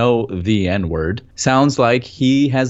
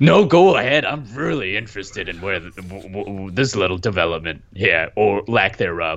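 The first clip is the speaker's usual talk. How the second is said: put-on gravelly voice, lower; 4 semitones lower than usual. Playing Aunt Tom in a bit, giving permission: gravelly Aunt Tom voice. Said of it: "Your voice got a little gravelier".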